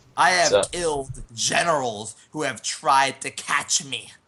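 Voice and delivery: shouting in character voice. Playing a character with a shotgun, yelling randomly into the distance: yelling in character. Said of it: "And I'm just sort of yelling".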